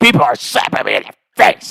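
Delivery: loud, screamed-out protest. Retelling a friend's complaint at night: imitating someone screaming. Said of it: "he's screaming".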